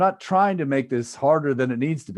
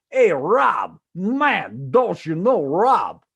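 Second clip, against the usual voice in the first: put-on pitched-up, drawn-out older man's voice; 6 semitones higher, 4 dB louder than usual. Show how a guy you used to wash dishes with spoke to you, imitating Zoltan. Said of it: "That voice is actually taken from a guy I used to wash dishes with".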